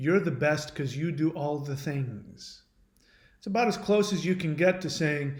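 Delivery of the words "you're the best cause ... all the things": normal talking voice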